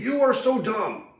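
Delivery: put-on very high, squeaky little-girl shriek. Speaker retells a voice from the back of the huddle, imitating a squeaky little scream. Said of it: "I hear this squeaky little voice in the back of the huddle scream".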